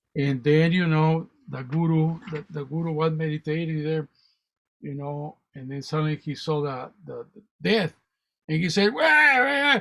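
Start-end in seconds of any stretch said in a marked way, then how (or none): 9.0-9.8 high-pitched yelling. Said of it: "started yelling at Death".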